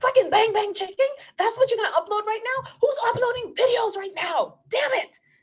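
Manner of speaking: very high, very loud, shrill, furious screaming rant. Retelling own reaction to a new cooking video upload, reenacting own screaming. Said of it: "I was literally screaming at my iPhone".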